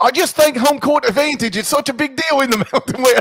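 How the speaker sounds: put-on Australian accent. Co-host giving a game pick after being asked to, in an australian accent. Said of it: "Should you do the rest of the Final Four and one with an Australian accent?".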